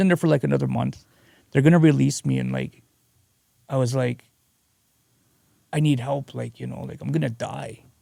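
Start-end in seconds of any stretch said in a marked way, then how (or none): 5.7-7.8 put-on frightened, scared pleading voice. Retelling asking for help before being released: imitating own scared plea. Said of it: "I was just scared".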